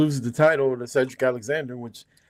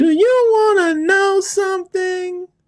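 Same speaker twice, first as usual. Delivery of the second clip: put-on very high, loud, slow drunken drawl; 5 dB louder than usual. Complaining about someone's line, imitating drunk Alicia Edwards. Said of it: "drunk-ass Alicia Edwards".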